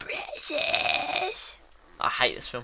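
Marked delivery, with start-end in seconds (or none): 0.0-1.6 put-on fantasy creature voice. Answering a remark that he sounds like Gollum: Gollum voice. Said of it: "You sound like Gollum".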